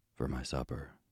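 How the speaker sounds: ordinary delivery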